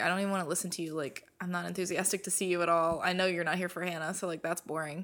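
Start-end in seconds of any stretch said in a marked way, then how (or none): none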